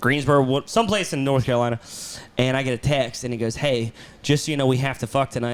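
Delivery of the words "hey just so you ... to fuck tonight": ordinary delivery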